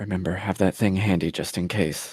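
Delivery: very quiet, barely audible whisper. Speaking in character to another character, out of earshot: whispering as quietly as possible. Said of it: "whisper to Rune as, um, as quietly as possible".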